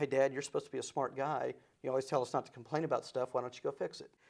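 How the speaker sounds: usual speaking voice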